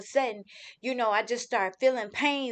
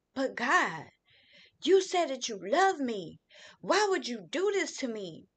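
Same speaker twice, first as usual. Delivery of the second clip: screaming cry with pitch swinging wildly; 2 semitones higher than usual. Retelling crying out to God in the past, retelling own screaming. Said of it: "I literally just started screaming like".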